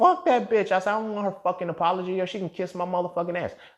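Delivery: put-on angry voice. Retelling own reply to an apology: retelling own angry words. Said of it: "I'm mad. I'm heated".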